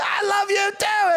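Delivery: very high-pitched shout. Recounting answering a woman calling after them at a counter: retelling a yell back. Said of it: "And I'm yelling back".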